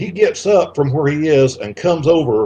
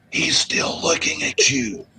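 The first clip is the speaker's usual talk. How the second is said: hushed, breathy whisper; 3 semitones lower, 7 dB quieter than usual. Retelling how a woman leaned over to them, the speaker whispers her words. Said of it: "she whispers".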